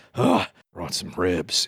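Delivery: weary, fed-up, put-upon, exasperated delivery. Imitating a man setting down ribs he brought, mock-exasperated. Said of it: "He would say it like that. He would be very exasperated about them".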